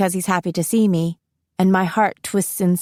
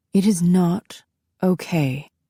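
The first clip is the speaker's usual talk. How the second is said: each word drawn out, very slow, deliberate. Narrating a mother's reply to her child's reassurance, very slow. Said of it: "she says very slowly".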